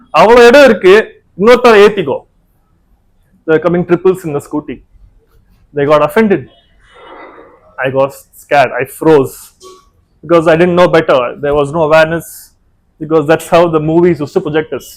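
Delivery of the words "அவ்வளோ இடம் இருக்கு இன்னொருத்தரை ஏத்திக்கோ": put-on Anglo-Indian accent over Tamil words. Retelling what a friend said after a scooter crash: imitating Anglo-Indian accent. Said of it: "in his Anglo-Indian accent".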